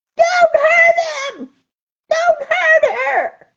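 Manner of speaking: high, slow screaming cry.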